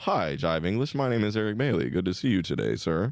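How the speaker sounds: polished, polite voice. A comedian showing how else he could talk, more proper voice. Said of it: "It was a little more proper".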